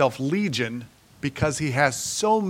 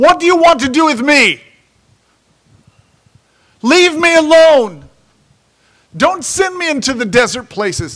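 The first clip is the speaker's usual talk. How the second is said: shrieking fearful cry, very high and very loud; 11 semitones higher, 12 dB louder than usual. Acting out a man screaming out at Jesus in fear. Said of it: "He screams out at Jesus".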